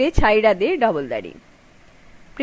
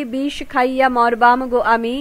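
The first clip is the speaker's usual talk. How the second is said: ordinary delivery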